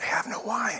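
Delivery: quiet whispered voice. Retelling how Mary brings the problem to Jesus: imitating a hushed whisper. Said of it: "in a hushed tone, she kinda whispers".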